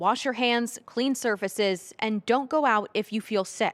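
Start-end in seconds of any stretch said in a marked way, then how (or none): none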